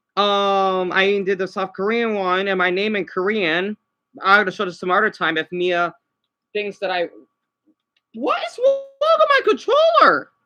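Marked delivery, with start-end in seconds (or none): 8.2-10.2 very high, swinging, swooping yelled outburst. Complaining that the controller is acting up: yelling. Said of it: "Sorry for yelling so much".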